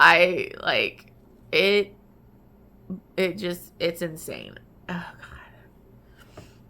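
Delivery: tearful, crying while talking. Reviewing an emotional book on camera, crying while talking. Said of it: "I'm sorry to be bawling on camera".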